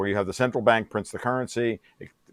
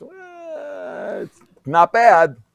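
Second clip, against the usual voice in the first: mock sobbing, pitched higher and louder; 14 semitones higher, 9 dB louder than usual. A physicist acting out a reaction to a failed hypothesis, imitating crying. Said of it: "(imitates crying)".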